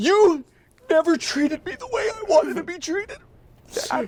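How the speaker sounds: very high, crying, dramatic, tearful speech. Performing a monologue to a father while crying: tearful dramatic monologue. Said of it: "We have to do monologues now".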